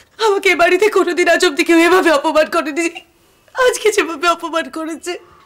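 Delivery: speaking while crying, tearful. Telling the elder sister-in-law about being insulted, crying while talking. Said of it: "তুমি কাঁদছো কেন?".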